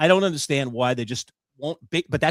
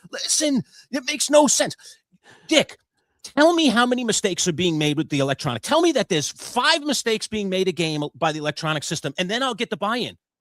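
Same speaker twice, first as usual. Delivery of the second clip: put-on, heated, raised arguing yell; 7 semitones higher than usual. The speaker re-enacts yelling at a guest about the electronic strike zone: retelling a yell. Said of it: "I'm yelling at the poor guy".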